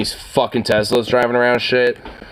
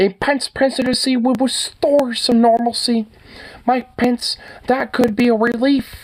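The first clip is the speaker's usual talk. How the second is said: very high, slow, mocking voice. Showing another speaker how to read a quote: mocking Kermit voice. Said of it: "you gotta use the Kermit voice".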